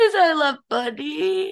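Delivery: high, weepy, tearful voice through crying. Podcast co-host wrapping up the episode explains why they're crying, crying. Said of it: "I'm crying".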